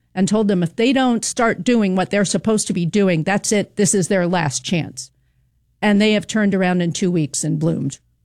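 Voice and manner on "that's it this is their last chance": ordinary talk, nothing marked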